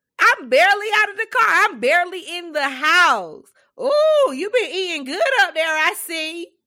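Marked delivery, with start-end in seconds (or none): 3.8-6.5 mock teasing tone, louder and higher pitched. Retelling what people say when the speaker arrives, loud mocking remark. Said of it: "they say it loudly so everybody around can hear".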